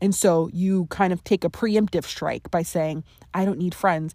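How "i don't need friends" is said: ordinary talk, nothing marked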